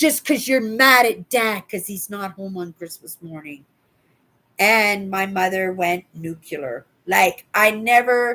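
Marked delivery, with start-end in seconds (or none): none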